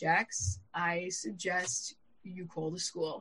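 very quiet, calm, unruffled voice. Stuck in a tunnel in traffic, quoting what he told jax, imitating a calm voice. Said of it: "He is the most calm person you could imagine".

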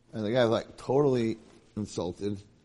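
ordinary delivery

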